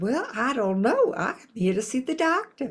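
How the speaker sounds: put-on strong Southern accent. Retelling a talk with a receptionist in a Southern accent.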